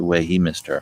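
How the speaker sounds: ordinary delivery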